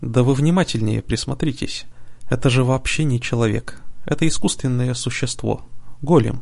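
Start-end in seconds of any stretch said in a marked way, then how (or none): none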